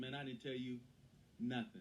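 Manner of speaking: ordinary talk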